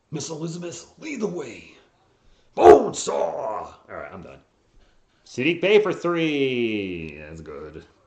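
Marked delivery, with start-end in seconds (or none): 0.1-3.7 loud voice with big swings in pitch. Doing an impression between plays: Macho Man voice. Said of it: "I kinda do his voice".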